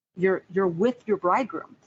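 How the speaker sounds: ordinary delivery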